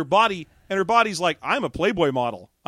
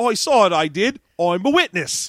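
bad, mock, put-on British accent; 4 dB louder than usual. Acting out what the last guy says as a witness; shitty fake british accent. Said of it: "the shitty British accent like we are doing".

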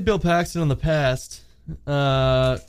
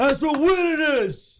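put-on tough-guy voice, higher pitch; 11 semitones higher than usual. Showing a practiced Rocky movie quote: Sylvester Stallone impression. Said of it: "I was working on a Sly impression".

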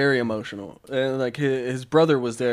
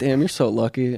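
usual speaking voice

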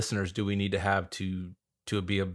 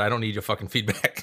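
ordinary delivery

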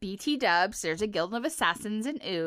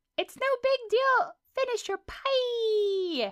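very high-pitched, nonchalant, casual, drawn-out "pie"; 14 semitones higher than usual. Asked to do a character impression, giving a Wildberry Princess impression. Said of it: "give me an impression of a character".

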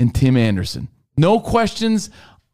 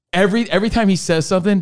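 ordinary delivery

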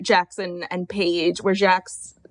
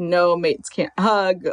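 mock dry, cutting, slow sarcastic delivery. Retelling how she turned down a hug: imitating Gemma's sarcastic tone. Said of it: "she said it in, like, a sarcastic way".

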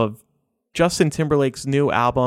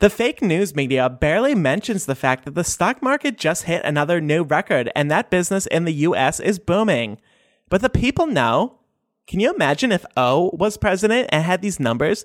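put-on Valley Girl accent held throughout; 4 semitones higher than usual. Read Trump's tweets aloud in a Valley Girl voice. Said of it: "read Trump's tweets in a Valley Girl voice".

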